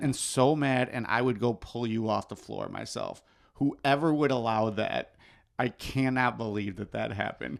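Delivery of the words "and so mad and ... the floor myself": plain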